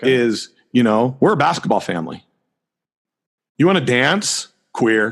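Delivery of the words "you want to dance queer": mock sarcastic tone, sneering and jabbing. Giving an example of family jokes, imitating a sneering jibe. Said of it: "The jokes, the sarcastic".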